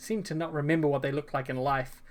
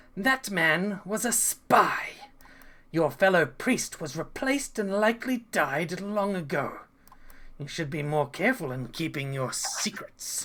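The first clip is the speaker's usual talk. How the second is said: raspy, unnaturally echoing, eerie voice; 3 semitones higher than usual. Narrating a game as the ghost council leader Vicimi, addressing the players: raspy, reverberating voice. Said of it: "he speaks with a raspy voice that reverberates unnaturally".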